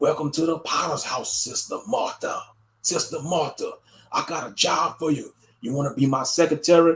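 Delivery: imitated smooth-talking pastor voice. Acting out a pastor who approaches a churchgoer's wife: imitating a smooth-talking pastor. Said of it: "the pastor see you coming".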